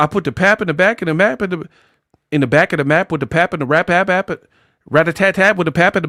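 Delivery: breathless, high, rapid, run-on rambling. Mocking a video clip's rambling speech: imitating fast talking. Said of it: "you talking all fast".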